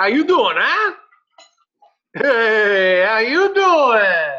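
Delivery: very loud, high Boston accent, drawn-out "hey". Answering a remark about the name Joey: Joey from Friends voice. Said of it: "I was going for more Boston".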